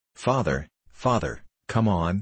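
plain reading voice

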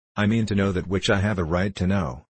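ordinary delivery

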